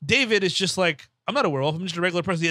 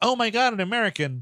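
smitten, thrilled, gushing exclamation like an American tourist; 3 semitones higher than usual. Retelling a movie scene, quoting the tourist character: imitating Julie Bowen's character. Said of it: "Julie Bowen's character is, like, an American tourist".

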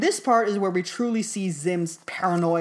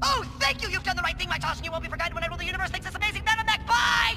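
fast, higher-pitched put-on cartoon voice; 12 semitones higher than usual. Retelling a comic scene where Zim calls in: Zim voice talking really fast. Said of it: "where he's talking really fast".

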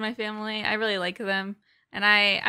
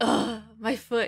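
groaning in pain. Retelling someone complaining about her foot in the car: imitating moaning and groaning. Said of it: "she was just like moaning and groaning like".

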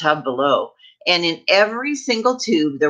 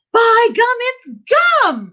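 very high, swooping, drawn-out excited shriek; 4 dB louder than usual. Narrator reads a gum-chewing girl's line after a pause, shrieking with excitement. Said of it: "she shrieked".

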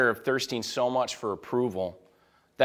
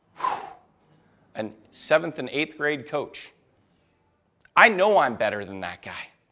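plain

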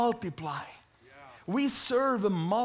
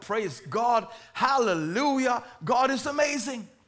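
ordinary delivery

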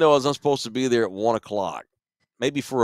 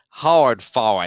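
put-on Cajun accent, said loudly; 5 dB louder than usual. Imitating the coach's catchphrase: Avery Johnson Cajun accent. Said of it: "Avery always used to say".

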